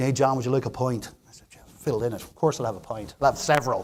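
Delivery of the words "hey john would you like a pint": put-on thick, heavily laid-on Dublin accent. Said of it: "he had a thick Dublin accent".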